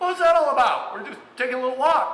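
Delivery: high, loud, baffled tone.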